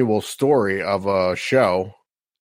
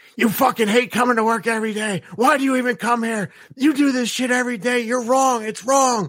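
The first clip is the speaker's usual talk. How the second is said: put-on shrill, very high screaming rant; 12 semitones higher than usual. Retelling a scene where a restaurant boss yells at a cook: imitating someone screaming. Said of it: "in his face screaming".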